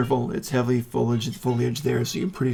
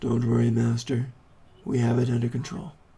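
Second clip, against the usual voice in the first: calm, serene, ethereal, unemotional voice. A voice from inside answers the yell about an attack, calm, serene, ethereal voice. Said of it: "very calm, very serene, almost ethereal voice".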